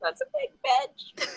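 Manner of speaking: put-on tiny prepubescent childlike voice, very high pitch. Recalling first seeing a very muscular woman, retelling the thought: tiny prepubescent voice. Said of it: "my like tiny prepubescent voice just going".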